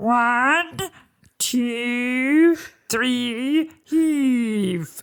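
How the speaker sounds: high puppet-style voice, "two" drawn out. Showing what the gravedigger's voice sounds like, in a voice like Fozzie Bear. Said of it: "The gravedigger's voice sounds like this".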